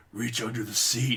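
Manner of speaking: very raspy, hoarse, rasping put-on voice. Retelling a driver with a beer in his cup holder, imitating his raspy voice. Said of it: "He had a very raspy voice".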